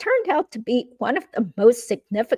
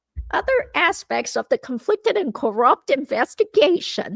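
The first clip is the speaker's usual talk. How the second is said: put-on New York accent; 2 semitones higher than usual. Reading a page aloud as Donna Adelson, in a fake New York accent. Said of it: "read this in a Donna Adelson fake New York accent".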